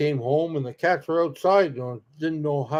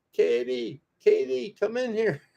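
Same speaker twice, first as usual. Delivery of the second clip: put-on excited, raised, rough, creaky yell; 8 semitones higher, 4 dB quieter than usual. Retelling calling a daughter in after a bee landed: imitating own yell. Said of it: "And I'm yelling at my daughter".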